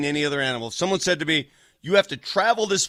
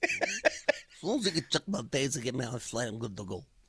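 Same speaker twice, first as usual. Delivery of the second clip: put-on thick New York accent, quieter; 3 semitones lower, 10 dB quieter than usual. Quoting a man trying to get to the Bahamas, in a Tony Soprano voice. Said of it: "He sounds a little bit like Tony Soprano".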